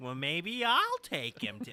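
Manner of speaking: put-on elderly woman voice.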